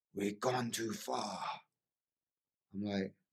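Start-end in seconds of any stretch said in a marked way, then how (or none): 0.2-1.4 put-on Dutch-accented speech. Retelling a vision, hearing a voice call out: loud Dutch voice of Wim Hof. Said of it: "this really loud Dutch voice go".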